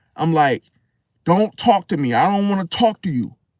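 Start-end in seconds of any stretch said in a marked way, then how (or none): 1.3-3.3 put-on fed-up, furious, angry snapping tone. Retelling to listeners how they snapped at a man, acting out an angry snap. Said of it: "after I snapped on him like that".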